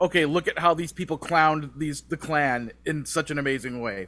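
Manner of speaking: ordinary talk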